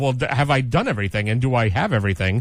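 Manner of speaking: plain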